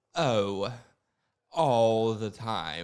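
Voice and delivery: unhurried, easy, slow and dragged-out delivery. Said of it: "this is [name]".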